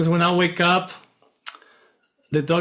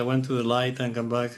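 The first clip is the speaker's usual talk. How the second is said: ordinary talk, nothing marked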